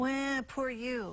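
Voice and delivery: sarcastic drawl. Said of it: "I was being sarcastic when I said".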